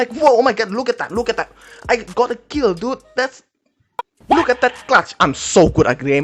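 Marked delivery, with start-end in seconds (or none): 0.0-5.1 hyped, high, excited shouting scream. Describing a player who screams into the mic after a kill: screaming excitedly. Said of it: "scream into the mic because you are you got a kill".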